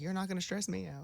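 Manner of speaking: put-on deadpan. Quoting his reply when she begs him to give her something: retelling a deadpan reply. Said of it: "just deadpan".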